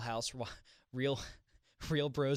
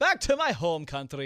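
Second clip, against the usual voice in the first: very loud, put-on leprechaun voice; 4 semitones higher, 9 dB louder than usual. Speaker answers a question in conversation, leprechaun voice. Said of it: "why are you giving a leprechaun voice?".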